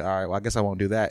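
ordinary talk, nothing marked

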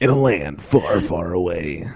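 deep, epic movie-trailer announcer voice. After failing at a Batman voice, the speaker does a movie trailer narrator voice. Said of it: "I sound more like the movie trailer guy".

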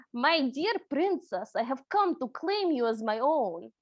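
clumsy, bad, fake Russian accent. Retelling a man's words to a princess, the speaker does a bad Russian accent. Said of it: "I'm gonna go ahead and do this with a Russian accent".

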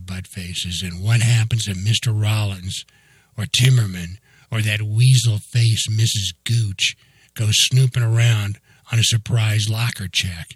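ordinary delivery

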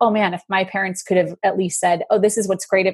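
normal talking voice

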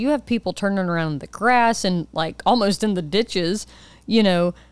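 usual speaking voice

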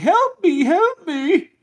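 very high-pitched woman's cry. Game master voicing a creature that cries out to the players in a woman's voice. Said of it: "it cries out with the voice of a woman saying".

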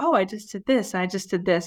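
usual speaking voice

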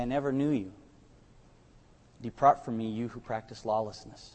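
firm, very strong, serious and sober voice. Preaching, quoting what he will say to those he turns away, in a strong, sober voice. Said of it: "in a very strong but a very sober voice".

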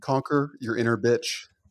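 ordinary delivery

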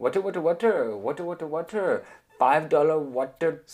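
put-on Indian accent. Retelling how sellers called out to him, imitating an Indian accent. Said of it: "pero con un acento indio".

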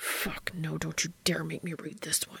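hissed through clenched, gritted teeth. Reading fiction aloud, the narrator gives a character's protest, hissed through gritted teeth. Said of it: "Dean hissed through gritted teeth".

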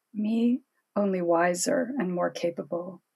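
ordinary delivery

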